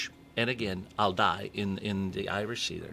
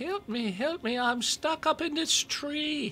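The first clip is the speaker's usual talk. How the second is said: very high, slow, tiny little leprechaun voice. Storyteller voicing the voice a man hears in the woods, little voice. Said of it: "he hears this little voice".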